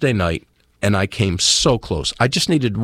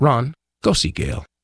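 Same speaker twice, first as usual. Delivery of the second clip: very calm, serene, gentle, unruffled voice; 2 semitones higher than usual. Retelling how a voice in your mind told you again, imitating a very calm voice. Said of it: "very calmly".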